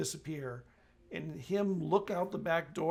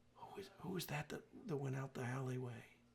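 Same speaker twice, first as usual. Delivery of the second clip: very quiet, hushed whisper; 2 semitones lower, 10 dB quieter than usual. Voicing a young reporter who leans in to ask: whispering. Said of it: "she leans in and she whispers".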